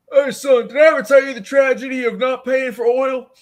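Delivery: very high, loud, blaring military recruiter voice. Imagining a military recruiter walking in: imitating a military recruiter. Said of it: "military recruiter coming in and be like".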